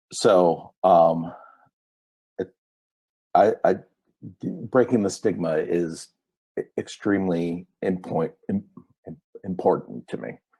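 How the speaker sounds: emotional, halting speech, tripping over words. Speaking openly about having needed inpatient care, emotional, stumbling over words. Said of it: "I'm tripping over my words because I'm getting a little emotional".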